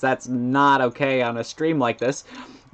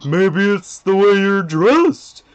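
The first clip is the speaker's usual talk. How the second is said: raised, high character voice, pitched up and projected; 7 semitones higher, 6 dB louder than usual. Showing off an impression practised on a line from a clip, Sans voice. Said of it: "being Sans".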